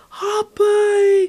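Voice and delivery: put-on high, loud toddler-like yell.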